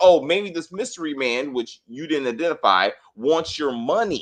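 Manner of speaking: ordinary delivery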